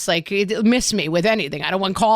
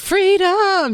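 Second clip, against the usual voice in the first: imitated very happy voice, higher pitch; 12 semitones higher, 4 dB louder than usual. Retelling a friend arriving at a bachelorette party: imitating a very happy friend. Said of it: "so happy".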